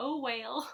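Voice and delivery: high voice, words broken up by laughter. Naming a little stitching pattern: laughing while talking. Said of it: "I can't say it without laughing".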